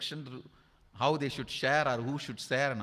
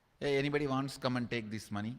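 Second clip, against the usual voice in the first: plain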